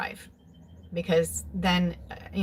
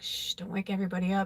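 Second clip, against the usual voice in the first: imitated whisper; 3 dB quieter than usual. Retelling how dad whispered through the bedroom door: imitating a whisper. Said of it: "whisper through the door".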